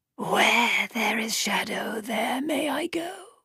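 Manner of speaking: soft, high, rustling snake voice. Narrator reading the halfman's reply when asked why it is here, voice like rustling snake. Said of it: "Its voice sounded like a snake rustling through dead leaves".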